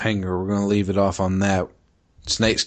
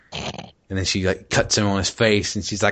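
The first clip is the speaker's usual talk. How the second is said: usual speaking voice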